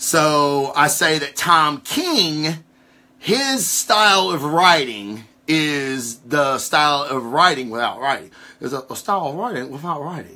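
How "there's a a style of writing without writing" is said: quick, quiet, awful impression. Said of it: "that's my Bruce Lee impersonation".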